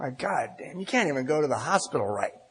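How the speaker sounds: put-on crying. Retelling putting head on the steering wheel after a failure: retelling crying. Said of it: "I just started crying".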